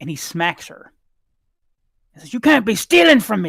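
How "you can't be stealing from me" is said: all-out, very loud, high screaming. Narrating a man who has just smacked a little elven girl, screaming at her. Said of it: "he's screaming at her".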